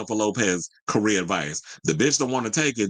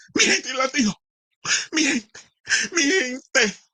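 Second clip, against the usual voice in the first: put-on possessed old-lady voice, much higher. Recalling a moment when Jennifer shouted, the speaker imitates her, Exorcist-like. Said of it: "sounds like um the old lady in um The Exorcist".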